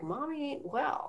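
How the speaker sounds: put-on tiny three-year-old's high half-whisper. Retelling a client's tattletale self speaking like a little three-year-old. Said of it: "like a little three-year-old".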